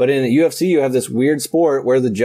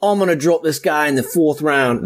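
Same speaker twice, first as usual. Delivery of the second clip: put-on sweet Irish accent, boastful tone; 3 semitones higher than usual. Arguing that Conor McGregor draws a spectacle, quote him in a Conor McGregor Irish accent. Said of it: "that was my sweet Irish accent".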